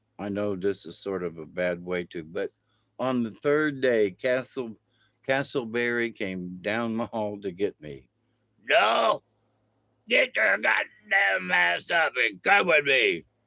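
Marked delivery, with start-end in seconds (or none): 8.7-13.2 gruff, rough voice, pitched up. Retelling how Castleberry came down the hall to get them, imitating Castleberry's gruff voice. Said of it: "It was real gruff and talked like that all the time".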